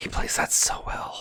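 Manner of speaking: hushed whisper. While watching a scene, the speaker comments on an actor, whispering. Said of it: "I don't know why I'm whispering".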